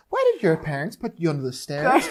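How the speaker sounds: soft, swooping, probing trained-psychiatrist voice. In an imagined wizard-versus-psychiatrist showdown, playing the trained psychiatrist. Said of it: "imagine like Harry Potter against a trained psychiatrist".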